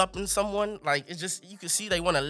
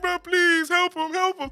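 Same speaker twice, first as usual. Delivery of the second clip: very high, put-on tearful crying voice; 10 semitones higher than usual. Retelling begging mom to help a sick brother: imitating own past crying plea. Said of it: "and I'm crying. I'm like".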